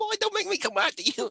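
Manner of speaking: put-on accent from Rhode Island. Retelling what Aunt Darlene said back then: Aunt Darlene's Rhode Island accent. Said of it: "she had that Rhode Island accent".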